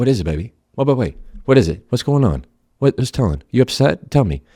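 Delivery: gentle, soothing, coaxing parent voice, guard down. Acting out a parent comforting an upset child: gentle, guard-lowered parent voice. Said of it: "you lower your guard and you go".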